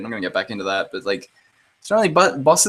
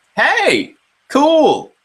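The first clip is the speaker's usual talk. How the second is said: very high, loud, mock breezy character voice. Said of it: "He was like".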